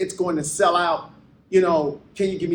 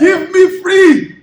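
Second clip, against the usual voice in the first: Haitian-accented speech; 13 semitones higher, 13 dB louder than usual. In a chat about accents, the speaker gives an attempted Haitian accent. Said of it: "That's not Haitian".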